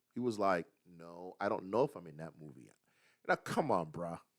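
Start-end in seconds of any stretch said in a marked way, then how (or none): 1.0-2.7 cool, detached, offhand, low and aloof. Retelling how an actor answered someone who cornered him, imitating Charlie Cox, mock-aloof. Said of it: "Charlie Cox said it very aloof".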